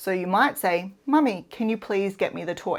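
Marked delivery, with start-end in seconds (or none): 1.0-2.8 even, calm speech. Parent models for their child how a calm request sounds, calm. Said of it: "model exactly what calm sounds like".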